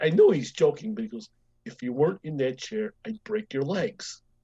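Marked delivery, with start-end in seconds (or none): 1.7-4.2 mock dead-serious deadpan tone. Retelling a man's joking threat to the speaker in the chair: mock dead-serious threat. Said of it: "he'd say it so dead serious".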